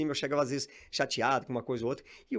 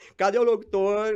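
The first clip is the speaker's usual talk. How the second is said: loud, high, cracked reedy teasing voice; 7 semitones higher, 7 dB louder than usual. Retelling how a man barged in mocking the speaker's wish to be an announcer, retelling a mocking taunt. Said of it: "E saía tirando uma".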